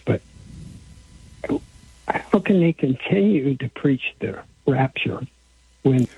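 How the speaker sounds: voice edged with frustration, exasperated. A caller questions why churches keep preaching the rapture, frustrated voice. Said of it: "I probably sound like it's frustrated in my voice".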